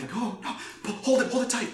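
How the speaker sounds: very high, frantic, panicky voice. Game master voicing people behind a locked door as a player pulls it: panicked voice. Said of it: "you hear like kind of panic".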